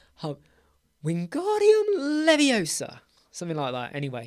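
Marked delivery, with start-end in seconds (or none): 1.1-3.0 very high, swooping put-on voice. Saying the spell the way everyone does it, Hermione voice. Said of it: "you put on a, a Hermione voice".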